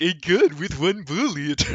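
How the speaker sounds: put-on very slow, old-timey Hollywood movie-star drawl. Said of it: "you sounded like an old-timey Hollywood actor".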